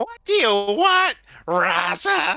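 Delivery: very high, loud, slow, grating, annoyed drawn-out voice. Repeating the ship voice's line back at the other speaker: imitating an annoyed grating voice. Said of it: "That's what you sound like".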